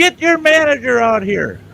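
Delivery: very high, angry, demanding shout. Retelling demanding the manager from an employee: imitating own yelling. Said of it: "I started yelling at her".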